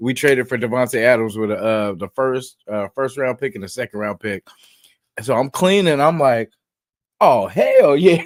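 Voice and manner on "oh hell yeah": mock juiced-up, high, loud celebratory shout. Retelling a reaction to breaking trade news while cleaning: retelling excited reaction. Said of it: "I was juiced".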